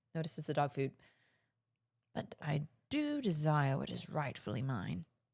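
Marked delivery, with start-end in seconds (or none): 2.2-5.1 put-on scheming, dramatic, menacing cat voice, British accent. Voicing a scheming cat in a script reading: menacing cat with british accent. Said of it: "a menacing, scheming cat with a British accent and a flair for drama".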